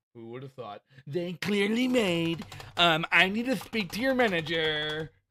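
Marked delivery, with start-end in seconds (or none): 3.1-5.1 demanding, entitled voice. Mocking someone's complaint by acting it out: put-on Karen voice. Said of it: "here he is being a Karen".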